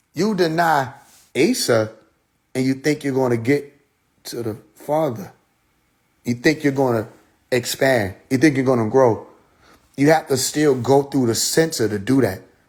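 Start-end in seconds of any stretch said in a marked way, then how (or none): 0.2-5.3 slow, deliberate, halting, broken-up, emphatic delivery. Speaker repeating a point to a listener who didn't hear it, said slowly. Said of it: "so I'm going to say it slow".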